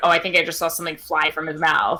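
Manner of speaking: ordinary talk, nothing marked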